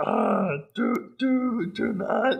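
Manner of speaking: squeaky voice, slow and rough. Mimicking how he does Yoda: bad Yoda impression. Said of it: "his Yoda is, like, a really".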